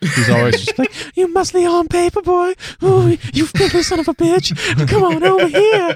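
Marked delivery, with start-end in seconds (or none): 1.2-6.0 very high-pitched, creepy, lecherous, leering purr. Describing an imagined scene mid-conversation, in Herbert from Family Guy voice. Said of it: "that minor character from Family Guy, the Herbert the pervert guy".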